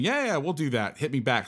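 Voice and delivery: put-on offhand, casual, jokey delivery. Recounting a man's joking answer about sponsoring the podcast, retelling a joking reply. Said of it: "Austin jokingly had said to me".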